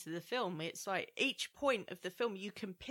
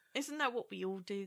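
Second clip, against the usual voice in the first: ordinary delivery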